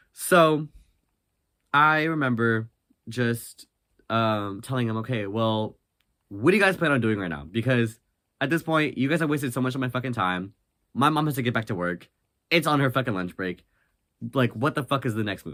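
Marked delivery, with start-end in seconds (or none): none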